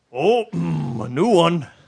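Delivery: loud, very slow, very drawn-out lumbering ogre voice. Narrating a scene, voicing the figure standing behind there greeting a new arrival, voice almost like an ogre. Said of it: "almost like an ogre, and he goes".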